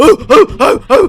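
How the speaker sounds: shrill, booming, slow, drawn-out ape hoots at full blast. Retelling how a father pretended to be a gorilla: imitating a gorilla. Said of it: "he pretends to be a gorilla and starts bashing the table".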